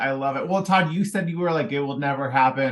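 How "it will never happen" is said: usual speaking voice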